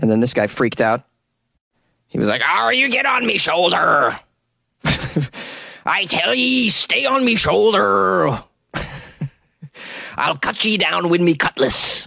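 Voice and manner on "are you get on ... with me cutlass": put-on slow, high, menacing pirate voice. Retelling how a guy freaked out over a parrot, pirate impression. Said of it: "that's about the extent of my pirate impression".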